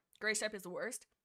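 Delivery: ordinary delivery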